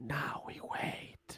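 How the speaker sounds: hushed, breathy whisper under the breath. A game master voicing a character who looks at the players and whispers. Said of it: "looks at you and whispers".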